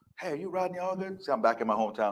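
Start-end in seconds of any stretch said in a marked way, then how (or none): 0.2-1.2 put-on very soft, hushed elderly lady's voice. Imagining an old lady recognizing him back in his hometown, old lady voice. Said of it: "some old lady goes".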